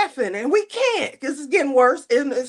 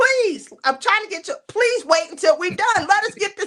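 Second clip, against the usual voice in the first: mock fed-up, high, exasperated pleading yell; 7 semitones higher than usual. Retelling how she yelled at a table that couldn't stop laughing, retelling someone yelling. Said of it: "And she steady yelling".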